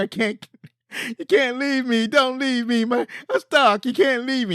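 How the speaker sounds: play-acted very high, tearful, tongue-tied crying voice. Retelling a movie scene where a stuck kid pleads: imitating a crying kid. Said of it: "the kid starts crying. He's like".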